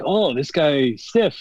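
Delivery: slow, bad, put-on Japanese accent. Retelling what a wrestler said about a match: bad Shibata impression. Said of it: "My shitty Japanese impression, I guess, of Shibata".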